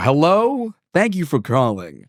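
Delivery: slow, silky smooth, polished, wide-awake phone voice. Describing answering phone calls after being woken, silky smooth phone voice. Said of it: "I'm silky smooth. I go".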